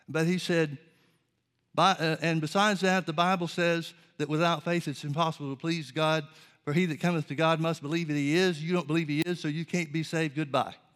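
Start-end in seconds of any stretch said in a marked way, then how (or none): none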